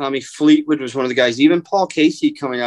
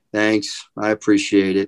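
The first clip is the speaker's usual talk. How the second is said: put-on sullen, soft voice, pitched lower; 4 semitones lower than usual. Retelling an Olympian's quiet thanks: imitating Abe's sullen, soft voice. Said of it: "in a very sullen, soft voice".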